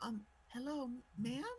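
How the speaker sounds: tiny, very high, small squeaky little voice. Game narrator voices someone tugging at a character's dress, very small voice. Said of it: "as a very small voice uh, speaks".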